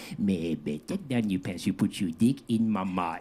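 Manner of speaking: put-on Cajun woman's accent, trying to sound sexy. Joking about Louisiana accents, the speaker does a put-on Cajun woman's accent. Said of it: "there's no way that a woman could say".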